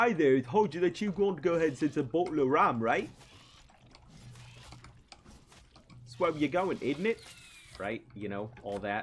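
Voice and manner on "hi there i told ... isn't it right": terrible put-on English accent, very high, shrill and loud. Explaining how he picks up other people's accents, the speaker tries a terrible fake English accent. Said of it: "my terrible farce of an English accent".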